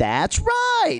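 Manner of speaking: put-on very high kids' cartoon voice. Speaker imitates his niece answering him, in a Nick Jr. cartoon voice. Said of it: "she talks like she's in a fucking Nick Jr. cartoon".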